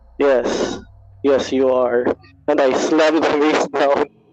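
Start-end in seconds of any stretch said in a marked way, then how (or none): 0.2-2.1 icy, dark, cold tone. In a tabletop game, a character raises a mace before slamming it down: dark, cold voice. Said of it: "I I just say in a dark, cold uh, voice".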